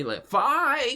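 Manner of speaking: voice cracking up high on "five".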